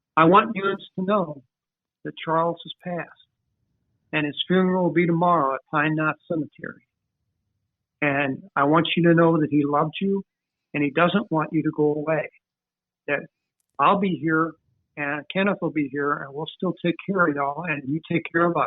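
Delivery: ordinary delivery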